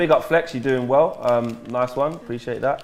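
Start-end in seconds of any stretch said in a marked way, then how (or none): none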